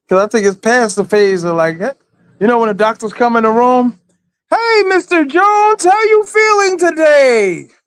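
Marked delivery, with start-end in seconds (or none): 4.5-7.5 mock very high, stretched-out, drawn-out yell. Retelling how doctors wake patients after surgery: imitating a doctor yelling. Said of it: "why are you yelling?".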